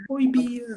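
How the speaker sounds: high, unvoiced whisper.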